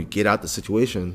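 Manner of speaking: ordinary delivery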